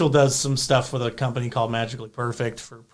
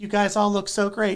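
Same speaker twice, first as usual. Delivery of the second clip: put-on very sweet man voice; 7 semitones higher than usual. Retell Mick Foley walking through and speaking to the girls dressed as princesses, very sweet Mick Foley voice. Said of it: "like very sweet man voice".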